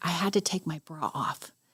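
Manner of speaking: giggling whisper. Retelling what a coworker said at work: imitating a giggly whisper. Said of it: "kind of whispered in a giggling way".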